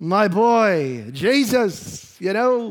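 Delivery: put-on loud New York accent.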